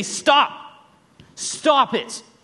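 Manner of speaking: firm no-nonsense tone. Retelling telling the boys to stop: imitating a dad not playing around. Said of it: "the dad is not playing around".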